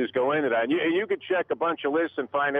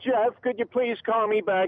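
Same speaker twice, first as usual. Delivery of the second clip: put-on high little old-lady voice; 8 semitones higher than usual.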